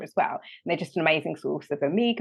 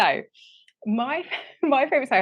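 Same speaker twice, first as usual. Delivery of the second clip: talking through laughter, higher pitch; 8 semitones higher than usual. Starting to answer a question about a favourite snack, laughing while talking. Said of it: "I don't know why I'm laughing".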